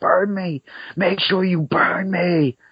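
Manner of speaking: very high, drawn-out put-on screaming. Retelling a dream of a man on his deathbed: imitating someone screaming. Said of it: "He's screaming".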